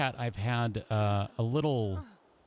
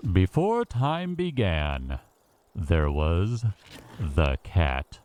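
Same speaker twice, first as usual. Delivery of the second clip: very slow, mild, slight announcer voice, raised, drawn out; 4 semitones lower, 6 dB louder than usual. Trying out a voice for listeners: slight announcer voice. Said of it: "slight announcery voice".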